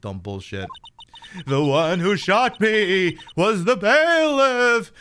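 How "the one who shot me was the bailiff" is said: acted ghost-like voice. Voicing the murdered Gregory Edgeworth, Gregory Edgeworth ghost voice. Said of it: "I'm gonna do a ghosty voice for this".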